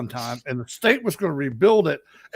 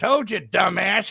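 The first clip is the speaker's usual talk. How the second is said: put-on voice of an old man nearby; 4 semitones higher than usual. Retelling a voice heard in the ear: imitating an old man's voice. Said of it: "you hear old man".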